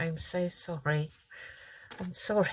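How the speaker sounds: words said through laughter. Apologizing after hitting the camera with a ruler, laughing while talking. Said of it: "I don't know why I'm laughing".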